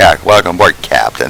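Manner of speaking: ordinary delivery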